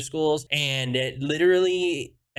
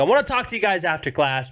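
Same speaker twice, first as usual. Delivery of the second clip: play-acted angry, stern, forceful tone; 4 semitones higher, 3 dB louder than usual. Retelling what he said after throwing them out: imitating someone really pissed. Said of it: "Really pissed".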